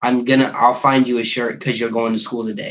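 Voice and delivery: irritated, worn-out, flat, pissy grumbling. Retelling what the other person said after getting up: imitating someone pissy and tired. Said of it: "all pissy and tired and says".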